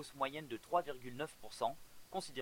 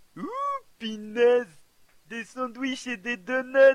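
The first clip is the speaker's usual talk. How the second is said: very high, shrill, very loud, booming, swooping cartoon voice; 11 semitones higher, 17 dB louder than usual. In a voice sample reel, the performer reads a line: Homer Simpson voice. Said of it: "Imitation de Homer Simpson".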